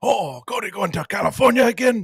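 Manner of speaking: very high, slow, drawn-out needling teasing voice. Joking about a trip, imitating an audience member. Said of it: "a random audience member".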